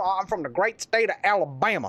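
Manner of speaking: put-on thick, heavy Southern American Alabama accent. Retelling how Spradley answered where he's from, Spradley's thick Southern accent. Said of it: "This is about the best I could do to imitate it".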